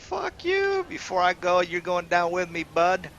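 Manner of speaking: angry, high, swooping goblin-creature voice. Voicing a dying hobgoblin who swears to take a hero down: hobgoblin voice. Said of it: "Hobgoblin is gonna be like".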